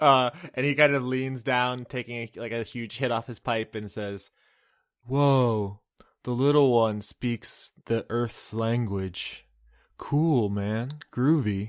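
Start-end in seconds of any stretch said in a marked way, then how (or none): 5.1-11.7 very slow, even slower, sloth-like drawl. Retelling what a man with a pipe said; slow Zootopia sloth voice. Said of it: "a very like slow Zootopia sloth like surprise".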